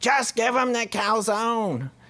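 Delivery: put-on shrill, very high yell. Retelling a story, voicing the mom yelling out the back: imitating the mom yelling. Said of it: "the mom is just yelling out the back".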